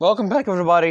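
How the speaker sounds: voice breaking and cracking, pitched high. Opening a new video and welcoming everybody back, voice cracking. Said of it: "That was a ridiculous voice crack".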